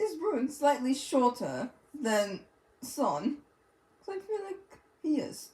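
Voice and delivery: put-on British accent. The speaker puts a question to the others in a British accent. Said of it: "I'm gonna go to my British accent when I'm asking this".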